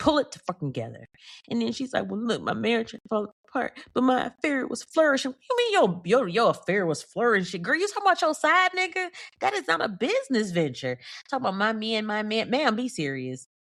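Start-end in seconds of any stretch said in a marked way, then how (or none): 2.1-5.3 mock tearful, trembling crying voice, higher pitch. Retelling what a crying woman said: imitating a tearful trembling voice. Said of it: "crying and shaking and her voice trembling".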